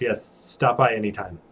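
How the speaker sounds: awkwardly flustered and sighing. Voicing a flustered character saying goodbye: flustered sigh and reply. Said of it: "She kind of flusterily sighs".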